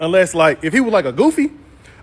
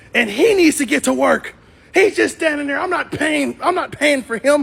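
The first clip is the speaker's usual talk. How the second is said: put-on screaming, higher pitch; 7 semitones higher than usual. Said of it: "screaming at me about my son".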